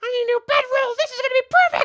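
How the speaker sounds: shrill, loud, quick, high kobold voice. Narrator voicing a kobold charging at a character, kobold voice. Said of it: "This kobold turns over to Morganth".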